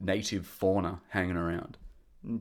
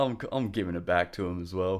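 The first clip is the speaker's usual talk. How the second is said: ordinary delivery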